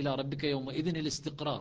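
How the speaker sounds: ordinary talk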